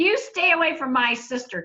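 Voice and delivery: play-acted, protective shouting. Retelling how a brother yelled at teasing boys: imitating a brother yelling. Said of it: "he just yelled at him and said".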